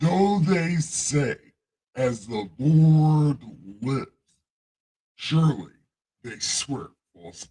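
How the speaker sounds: put-on booming deity voice. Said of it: "in God voice".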